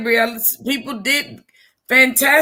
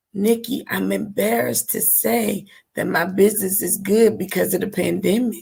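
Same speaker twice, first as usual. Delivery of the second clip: secretive, confiding, half-whispered stage whisper; 5 semitones lower, 4 dB quieter than usual. Retelling what another business owner said on the phone: imitating a half-whisper. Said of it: "but she was whispering".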